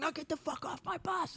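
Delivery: acted out, shrill, high, screaming drill-instructor voice. Recalling arrival at the recruit depot, the speaker acts out the drill instructor screaming. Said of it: "he just starts screaming".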